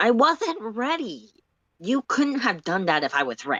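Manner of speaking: needling, snarky, defensive, insistent tone. Solix, just disarmed by you, snarks at you. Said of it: "[name] snarks at you, / He wanders casually over to the frozen bot and takes its sword. / [name] snarks at you".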